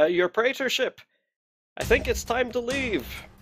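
shouted character voice. Alan steps to the edge and shouts down to the dais: Alan shouting. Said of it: "and shouts".

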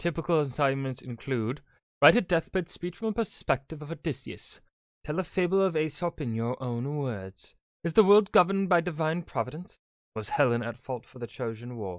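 drifting, slipping into a British English accent. Narrator listing typical ancient school assignments, drifting into a British accent. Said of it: "I don't know why I'm going British".

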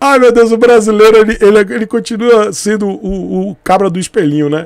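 nervous laughing through the words. Speaker admits being nervous while talking, nervous laughter. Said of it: "Eu tô rindo de nervoso".

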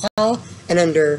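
ordinary delivery

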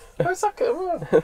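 high, gushing, admiring tone. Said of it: "I'd be like".

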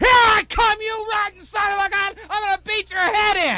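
play-acted very high, loud, threatening yelling and screaming. Retelling charging up the steps with a baseball bat: imitating own past yelling. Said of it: "Yelling and screaming".

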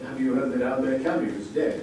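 plain

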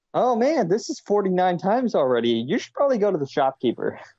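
high, snide, mocking tone.

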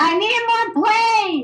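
slow, high, drawn-out yell from far off. Player far away from the others in a group game calls out, shouting. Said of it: "you don't have to shout!".

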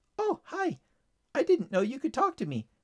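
bright, chipper, cheerful, swooping sing-song. A bird replies to someone's silent greeting, cheerful. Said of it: "replied the bird cheerfully".

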